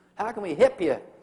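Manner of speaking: loud, fake, laid-on Texas drawl. Imitating a call center worker greeting a caller: imitating a put-on Texas accent. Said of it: "how to speak with a Texas accent".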